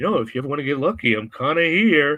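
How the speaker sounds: bashful, sheepish, hesitant, half-hoping tone. Retelling a movie scene, imitating Idris Elba sheepishly. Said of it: "Idris Elba kinda sheepishly goes".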